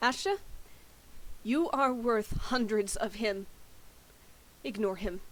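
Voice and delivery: pointed, deliberate, declaring tone. In a game scene, a character turns around and calls to a companion, very loud. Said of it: "and says very loudly".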